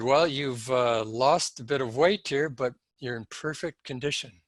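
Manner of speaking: ordinary talk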